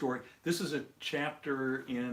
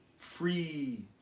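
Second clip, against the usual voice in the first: heavy emphasis on the word "free"; 4 semitones higher than usual. Explaining what happens when the rug is pulled out, stressing 'free'. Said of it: "With the emphasis on the word free".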